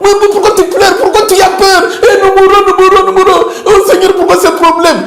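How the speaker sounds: high, frightened, panicked pleading voice.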